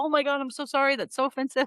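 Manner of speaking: play-acted high, freaked-out, flustered voice. Retelling the girlfriend's reaction to an awkward joke: imitating someone freaking out. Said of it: "freaking out".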